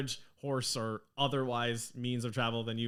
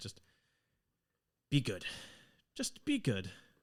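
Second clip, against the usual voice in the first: holding back emotion, quieter; 4 dB quieter than usual. Narrator voicing the mother as she hugs each of her children, holding it together. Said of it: "She's trying to hold it together".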